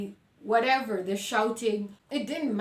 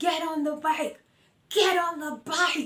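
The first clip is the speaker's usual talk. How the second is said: high-pitched, repeated shouted yell; 7 semitones higher than usual. Retelling how a former partner on a motorcycle yelled at the speaker: imitating him yelling. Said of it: "he's yelling at me".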